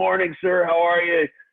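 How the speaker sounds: shrill, very high scream at full volume. Recounting a morning run, the speaker acts out greeting an old man: retelling a scream. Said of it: "I'm screaming".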